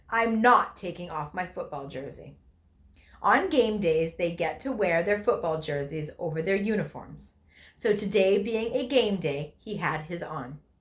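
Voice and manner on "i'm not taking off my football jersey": put-on stern tone. Retelling what Logan said in the church parking lot, imitating a stern voice. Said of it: "in a very stern voice".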